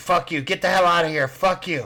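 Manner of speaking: furious, high, shrieking bird voice. Voicing a bird that a player just threatened: bird screaming back. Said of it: "He's just screaming back at you".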